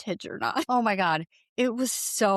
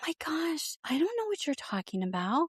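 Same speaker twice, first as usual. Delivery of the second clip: very high, soft, raspy put-on voice; 8 semitones higher, 4 dB quieter than usual. Describing how her voice changes, act out her denial, imitating her very high, soft, raspy voice. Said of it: "voice is like a thousand times higher in octave".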